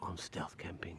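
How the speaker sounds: hushed, half-whispered stage whisper aside. A speaker mimics how online creators half-whisper to a camera, putting on a half-whisper. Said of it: "I meant to whisper when I say that".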